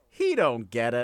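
goofy, wacky sitcom-style delivery. Retelling a man's line to the camera in his garage, in a wacky sitcom voice. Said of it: "doing it in this like wacky sitcom voice".

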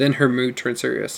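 ordinary delivery

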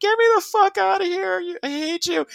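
mock kicking-and-screaming shriek, very high. Acting out someone kicking and screaming on board a ship: acting out screaming in protest. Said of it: "you're kicking and screaming".

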